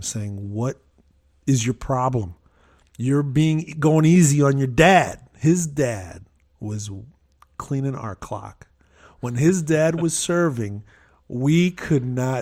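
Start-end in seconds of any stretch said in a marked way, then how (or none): 0.5-5.2 mock yelling, much louder. At racquetball with a neighbor and his dad, retelling a yell at the neighbor. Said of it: "I was yelling at him".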